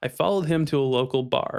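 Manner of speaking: ordinary delivery, nothing marked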